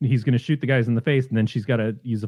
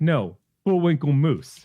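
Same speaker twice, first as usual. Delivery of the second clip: mock sarcastic tone, pitched higher; 4 semitones higher than usual. Retelling a movie character's answer to a detective question: imitating a sarcastic reply. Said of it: "he's so sarcastic".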